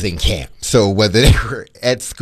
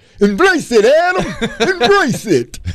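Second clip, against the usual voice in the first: very high-pitched, insistent, pushed-out urging tone. Retelling what a driver said on the way to dinner, sounding like Rocky. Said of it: "You sound like Rocky".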